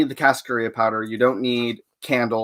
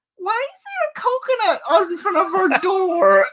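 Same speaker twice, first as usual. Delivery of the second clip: put-on very high, sing-song little girl voice. Watching TV at home, retelling a voice heard outside, in a little girl's voice. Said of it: "this little girl's voice going".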